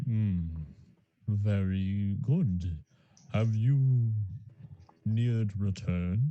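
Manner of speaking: deepest bass register, words stretched and drawn out. A character answers someone coming into the station, in a double bass voice. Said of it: "a double bass voice".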